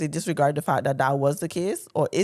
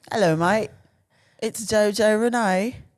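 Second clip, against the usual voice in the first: botched, bad put-on Australian accent; 4 semitones higher than usual. Greeting viewers after being asked which accent: bad Australian accent.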